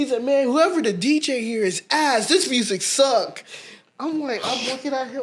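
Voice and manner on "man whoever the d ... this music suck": put-on brash, loud, obnoxious drunken voice. Retelling what a drunk friend said about the DJ's music: imitating a loud obnoxious drunk. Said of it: "he gets super loud and obnoxious".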